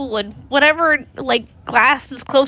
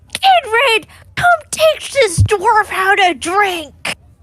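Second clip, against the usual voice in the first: high-pitched scream, projected to carry far; 7 semitones higher than usual. Voicing a character who looks over at her table, screaming across the room. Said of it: "kind of look over at her table and scream".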